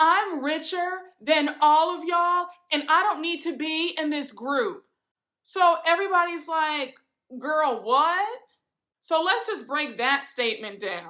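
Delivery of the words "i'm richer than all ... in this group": put-on scream, higher pitched. Retelling how an upset woman screams at her group out of nowhere, imitating someone screaming. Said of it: "Lisa screams out of nowhere".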